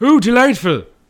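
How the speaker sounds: very loud, high, shrill belted exclamation. Showing another speaker a better impression: Montrose impression. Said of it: "that's a good impression".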